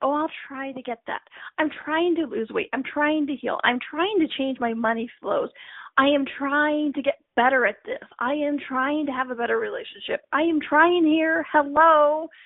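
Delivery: whiny, whining, complaining voice.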